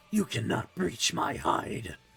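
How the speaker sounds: filtered creature voice. A game master voices a creature as the player stabs it, in a filtered creature voice. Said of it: "You hear the voice".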